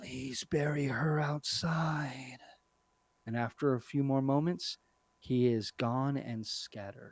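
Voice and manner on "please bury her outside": slow, very raspy, rasping ghostly voice. The narrator voices a fading spectral creature's last words in a very raspy voice. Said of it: "you hear its very raspy voice say".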